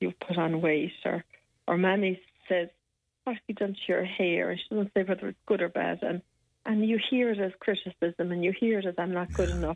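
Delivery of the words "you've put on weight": put-on gruff voice. Describing visiting home at Christmas, quoting Daddy, imitating a gruff father. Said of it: "Daddy is gruff and he looks at you".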